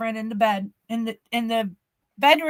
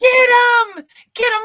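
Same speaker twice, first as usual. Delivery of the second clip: put-on scream, higher and louder; 13 semitones higher, 10 dB louder than usual. Retelling a mother screaming during a night break-in scare: imitating mom screaming. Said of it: "My mom's screaming".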